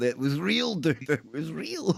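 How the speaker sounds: put-on, high, adamant, unbudging insistence. Retelling their own past protest about the dragon, having none of it: retelling an insistent protest. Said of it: "having none of it".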